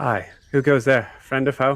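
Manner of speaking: loud call from a distance. Voicing a sentry who hears someone approach in the dark: calling out from a distance. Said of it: "a female voice, uh, call out and go".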